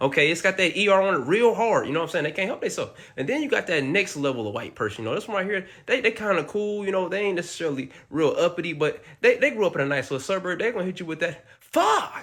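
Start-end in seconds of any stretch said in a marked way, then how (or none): 10.6-12.2 mock-surprised, startled exclamation. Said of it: "Like they're surprised that something like that could".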